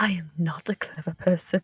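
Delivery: very quiet, very low, hushed whisper. Playing a character in a group roleplay scene, whispering to Arthas. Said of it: "She whispers".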